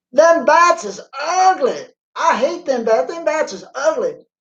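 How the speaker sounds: put-on terrible thick Kentucky accent, pitched very high. Recalling a gift-shop worker at Mammoth Cave, the speaker quotes her; imitating Tony's terrible Kentucky accent. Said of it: "She had the most terrible Kentucky accent".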